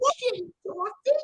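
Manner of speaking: very high squeaky puppet voice with Australian accent. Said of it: "That would be like".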